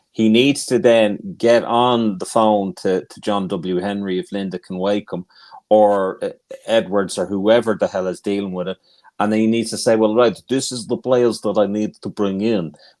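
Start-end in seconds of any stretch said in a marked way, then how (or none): 10.0-12.7 terrible, bad, put-on Dutch accent. Voicing what he needs to say on the phone, in the worst dutch accent ever. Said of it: "That's the worst Dutch accent ever".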